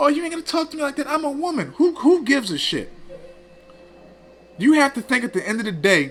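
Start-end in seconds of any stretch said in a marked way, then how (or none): 0.0-1.7 sarcastic, whining voice, high and soft. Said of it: "act like a fucking punk".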